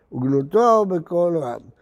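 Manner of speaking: ordinary talk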